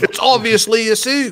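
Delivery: very high, put-on armchair expert voice. Quoting a guy in the UK who calls it a suit: Richard Allen impression. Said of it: "Was that a spot-on Richard Allen impression?".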